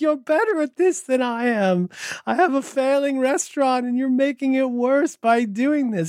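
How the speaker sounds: mock near-tearful pleading. Retelling a comedy sketch with a failing restaurant owner: imitating someone about to cry. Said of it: "he looks like he wants to cry".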